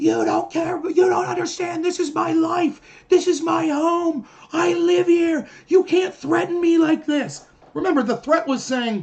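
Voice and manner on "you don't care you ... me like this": really shrill, drawn-out screaming. Retelling a girl screaming at a man surrounded in the quad: imitating shrill screaming. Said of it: "screaming in a really shrill voice".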